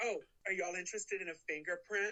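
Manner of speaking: sassy, cheeky tone dripping with sass. Recapping a scene, doing his line with a mock-sassy delivery. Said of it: "You said that so sassy".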